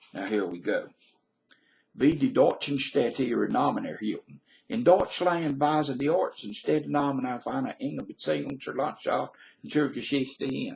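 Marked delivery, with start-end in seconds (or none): 2.0-10.8 German spoken with a Southern US accent. Claiming a native German accent, then reading German text with a Southern accent. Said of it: "I love to speak German with a southern accent".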